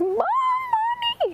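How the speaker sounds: put-on, very high child's shriek, "mommy" drawn out. Retelling how your daughter grabbed your arm: imitating daughter screaming. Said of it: "one daughter just grabs my arm and s- screams".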